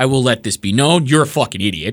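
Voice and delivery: open, scornful, contemptuous disdain. Addressing people who are losing it on a widow and children: open disdain. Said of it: "if you cannot hear the disdain in my voice".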